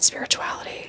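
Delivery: hushed whisper on the word spirituality. Turning to a new topic in conversation: whispered spirituality. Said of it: "I say it with a whisper".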